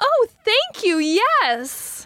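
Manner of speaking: very slow, high, sing-song, polite gentlemanly enthusiasm. Retelling a polite three-year-old's reply to lunch: imitating a child's enthusiastic reply. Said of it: "that's his response with, like, that enthusiasm".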